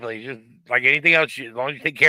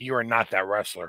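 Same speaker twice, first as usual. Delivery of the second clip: soft, hushed whisper, close and quiet; 5 semitones lower, 8 dB quieter than usual. Retelling what the wife said about a wrestler reference: imitating a whisper. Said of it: "the wife just whispered to me".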